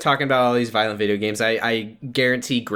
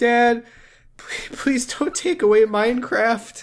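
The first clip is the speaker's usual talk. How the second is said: very high-pitched, drawn-out fake crying; 14 semitones higher than usual. Imagining a son pleading with his dad, Barron Trump mock crying.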